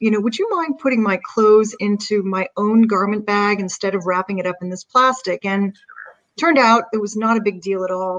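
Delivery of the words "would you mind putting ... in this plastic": ordinary delivery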